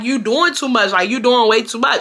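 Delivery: ordinary delivery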